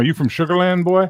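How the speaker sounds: put-on Mexican accent, pitched high. Imitating how a man would ask someone a question, mexican accent. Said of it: "Mexican accent, so he'd be like".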